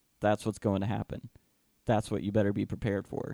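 ordinary talk, nothing marked

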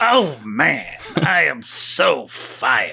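put-on old security guard voice. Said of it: "in a very Stan Lee-y sort of way".

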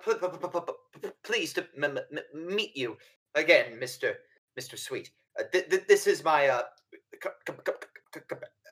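heavy stuck stutter on "pleased" and "meet". Answering a question put to [name], reading his reply with a heavy stammer. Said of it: "My my my, my stammer is a".

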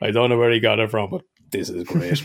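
ordinary talk, nothing marked

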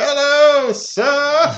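put-on over-the-top, very high, loud little-kid voice. Retelling a film scene, imitating a larger-than-life kid actor.

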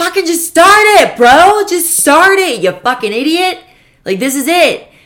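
shrill, very high, loud screaming. Describing months of an inner voice urging them to start, imitating a screaming inner voice. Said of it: "it just starts screaming at you".

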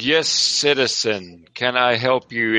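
slow, contemptuous, put-upon, disdainful delivery. Voicing event staff answering an approaching player: disdainful voice. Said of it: "the disdain on his voice".

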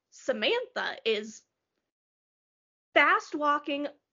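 normal talking voice

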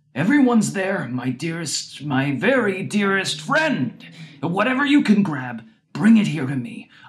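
high, swooping, whining and pleading voice. Narrating a man calling to a young man in a cart: whiny imploring voice. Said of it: "Makarenko whined in an imploring voice".

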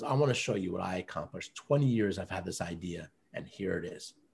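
put-on weeping, low, soft, tearful speech. Speaker recounts a man showing his finished book on a call, imitating him crying. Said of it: "He gets on and he's crying".

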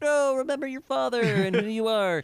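put-on shrill, urgent shout, very high. Retelling the end of a movie, acting out John's line: retelling John's yell. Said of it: "where John is yelling like".

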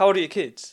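blunt, hostile tone. Asking another speaker a question mid-conversation: aggressive. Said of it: "Sorry, that was really aggressive".

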